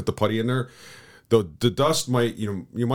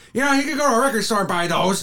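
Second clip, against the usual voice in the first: very high, shrill screaming; 12 semitones higher, 4 dB louder than usual. Retelling being yelled at while flipping through albums: imitating someone screaming. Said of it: "screaming at me".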